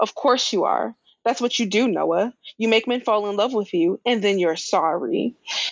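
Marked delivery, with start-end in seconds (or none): none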